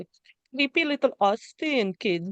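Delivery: bad, clumsy, high-pitched Austrian accent. Talking about a scene with someone, going for an accent, in a failed Arnold Schwarzenegger accent. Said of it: "I don't know what accent that was".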